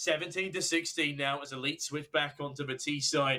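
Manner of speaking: ordinary talk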